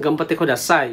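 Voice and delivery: ordinary talk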